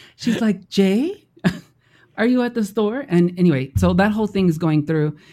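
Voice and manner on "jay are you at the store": high, put-on woman's voice. Retelling a story about Jay trying to get back in, the speaker is imitating the woman's voice. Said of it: "you started doing the voice".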